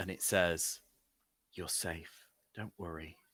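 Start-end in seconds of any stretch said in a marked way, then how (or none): 1.5-3.2 hushed, ghostly, very soft eerie half-whisper. A narrator voices a voice heard in a dream, half-whispering. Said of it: "you hear a voice, a whisper".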